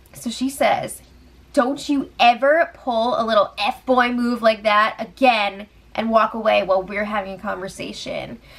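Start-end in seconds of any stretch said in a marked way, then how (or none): none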